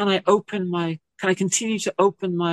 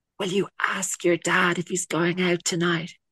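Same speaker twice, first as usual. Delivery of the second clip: imitated whisper. Retelling how mum whispered a question to her child, retelling a whisper. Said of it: "And she whispered".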